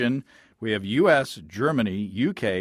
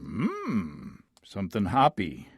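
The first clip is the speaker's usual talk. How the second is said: put-on wise old alien voice, quieter; 5 dB quieter than usual. Naming a beer's bitterness, answering in a Yoda impression. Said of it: "Is that a Yoda impression?".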